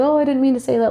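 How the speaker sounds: cutesy, playful, cute voice. Retelling how he said something in a cute way: imitating a playful, cute voice. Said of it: "in a really like, kind of like a playful, cute voice".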